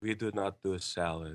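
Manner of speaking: put-on Czech accent. Quoting a lady refusing a customer's request: thick Czech accent. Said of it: "said in this thick Czech accent".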